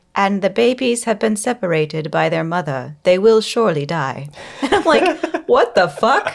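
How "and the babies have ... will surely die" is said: put-on placid, unruffled narrator voice. Complaining about how narrators sound, speaker does an imitation of a placid NPR narrator. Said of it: "this like N P R like placidity to their voice".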